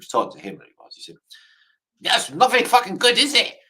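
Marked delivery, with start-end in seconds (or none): 2.0-3.5 put-on German accent, pitched high. Imitating Adolf Hitler judging the Mona Lisa: Hitler in a German accent. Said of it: "He said in a German one".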